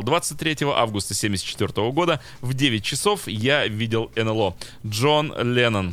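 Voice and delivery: ordinary talk, nothing marked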